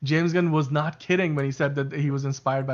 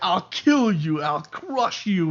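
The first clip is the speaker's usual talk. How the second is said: slow, heavy, terrible put-on Russian accent; 4 semitones higher than usual. Telling someone how you love Giamatti's villain, quoting him in Rhino's really terrible Russian accent. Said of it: "in this like really terrible Russian accent".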